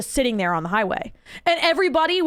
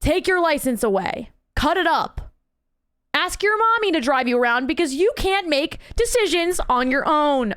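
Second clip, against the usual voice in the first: furious, fed-up, angry ranting; 3 semitones higher than usual. Speaker vents about another driver on the highway, mad. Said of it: "Sorry, I'm so mad".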